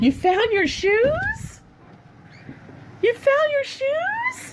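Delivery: sweet, cutesy voice, very high. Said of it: "I love how cutesy she's talking".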